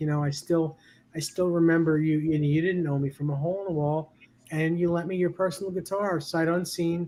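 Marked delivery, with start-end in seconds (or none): none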